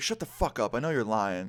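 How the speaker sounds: put-on drunk, angry woman's voice. Retelling threats from a woman who was drunk and angry: imitating a drunk angry woman. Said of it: "everything I just said came out that way".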